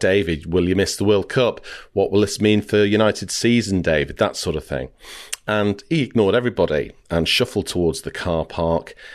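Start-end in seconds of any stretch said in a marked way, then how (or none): none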